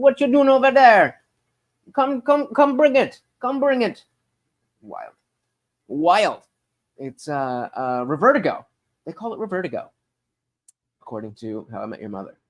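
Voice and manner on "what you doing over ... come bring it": put-on Caribbean accent, very high and loud. Imitating parents falling back into their accent, put-on Caribbean accent. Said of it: "they they fall right back into it".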